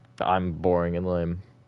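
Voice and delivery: ordinary delivery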